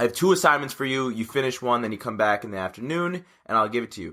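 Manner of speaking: ordinary talk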